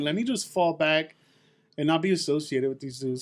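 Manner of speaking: ordinary talk, nothing marked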